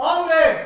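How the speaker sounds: high, loud shout. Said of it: "le gritan".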